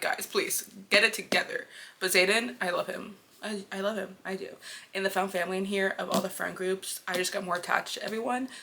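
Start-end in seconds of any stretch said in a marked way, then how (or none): none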